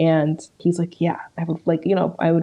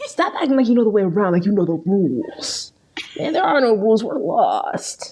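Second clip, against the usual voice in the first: dramatic, TV-drama style delivery; 3 semitones higher than usual. Quoting a TV show scene to a friend: Rick Grimes impression. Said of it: "Is that a good impression?".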